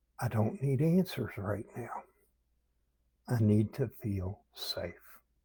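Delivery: soft whisper. Speaker demonstrates what we might whisper to ourselves, whispering. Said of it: "We might whisper something like".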